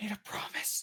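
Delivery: faint, soft, breathy whisper. Voicing a character who shields another in a fight: whisper. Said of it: "just a whisper of".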